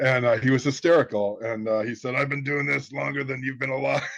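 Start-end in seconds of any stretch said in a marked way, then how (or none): 2.1-4.0 put-on fast, grizzled, old-school voice. Recounting what an old-school private investigator said, in a grizzled voice. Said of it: "He had this grizzled voice".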